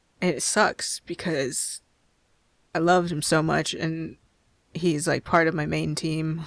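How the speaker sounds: normal talking voice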